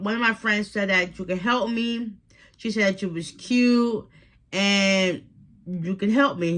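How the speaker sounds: ordinary talk, nothing marked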